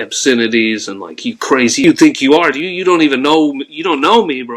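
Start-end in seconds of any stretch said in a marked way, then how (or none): 1.2-4.6 mock furious, raging scream at full force. Retelling cornering someone in a bathroom: imitating himself screaming. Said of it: "I'm screaming at the top of my lungs".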